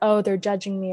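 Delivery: ordinary delivery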